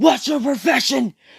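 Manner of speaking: very high, loud, screeching scream. Narrating a made-up fight where one character questions another; screaming. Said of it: "As he screams".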